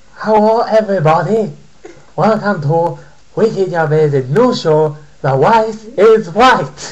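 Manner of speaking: put-on Chinese accent, high and loud. Following a request to speak a certain way: mock Chinese accent. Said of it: "I want you to speak like".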